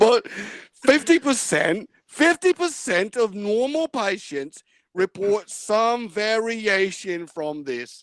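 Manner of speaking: put-on Australian accent. Reading a paragraph aloud as another speaker requested: australian accent. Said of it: "Now do that in an Australian accent".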